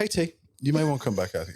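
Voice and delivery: play-acted casual, offhand, totally unbothered tone. Retelling how Gary warned of the fire: imitating Gary's nonchalant tone. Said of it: "really nonchalant".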